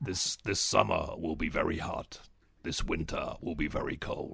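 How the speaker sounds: very low, ominous, menacing American announcer voice. A speaker recalls a voice they used to love and imitates the deep, menacing American voice. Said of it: "the really deep, menacing American voice".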